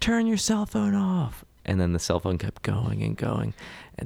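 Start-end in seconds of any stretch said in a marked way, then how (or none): 0.0-1.4 very high, raspy, rough shout. Describing an audience member who kept shouting over a ringing phone, retelling someone shouting. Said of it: "someone kept shouting".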